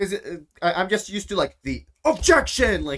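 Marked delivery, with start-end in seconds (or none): 1.6-2.8 loud, over-the-top, dramatic shouting. Showing how a courtroom objection usually sounds: loud over-the-top objection. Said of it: "it's super loud and, like, over the top".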